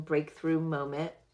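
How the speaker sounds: plain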